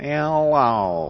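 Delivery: grating, annoying put-on radio announcer voice. Impression of a National Public Radio talk show host: Diane Rehm impression. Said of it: "we'd like to do our impression of the most annoying female radio announcer on the planet".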